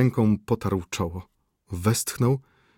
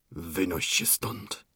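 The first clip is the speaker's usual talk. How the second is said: quiet, muffled, breathy, stifled near-whisper; 3 semitones lower, 9 dB quieter than usual. Aleksy Mikołajewicz orders Szczukina to get out, in a quiet, muffled voice. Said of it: "wyrzekł cichym, przytłumionym głosem".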